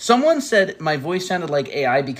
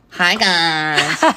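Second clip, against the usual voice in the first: put-on loud valley girl streamer voice, "guys" stretched; 2 semitones higher, 5 dB louder than usual. Asked to imitate the other speaker's streamer voice; imitating a streamer's voice. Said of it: "imitate my streamer voice".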